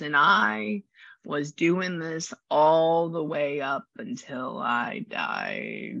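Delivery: hoarse, raspy, very slow drawl. Telling her mom what a woman said, the speaker is imitating a raspy voice. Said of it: "She has like a raspy voice like that".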